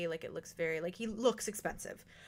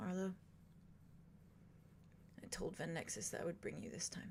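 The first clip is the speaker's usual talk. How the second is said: very quiet, soft, almost whispered murmur; 14 dB quieter than usual. A game narrator voices a man addressing Arlo after a once-over: speaking very softly. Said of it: "you hear him say very softly".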